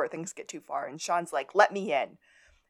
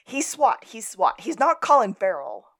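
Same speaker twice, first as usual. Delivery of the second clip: acted-out high, loud screaming, words hammered twice; 5 semitones higher, 6 dB louder than usual. Recapping a TV scene, quoting a character's scream, retelling Sean's scream. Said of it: "And Sean screams".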